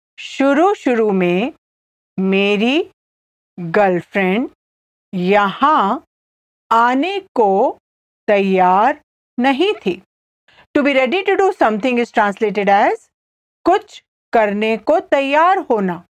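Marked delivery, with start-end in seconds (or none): 0.2-10.0 slow, deliberate, halting phrasing, broken up. Repeating a Hindi translation again for the listener: slowly. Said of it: "I'll say it again slowly".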